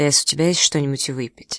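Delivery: ordinary delivery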